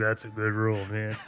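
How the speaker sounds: imitated gruff man's voice. Describing how Ryan reacts to Kofi's rules, doing Ryan's grumpy voice. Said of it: "Ryan's got this grumpy voice with his mustache".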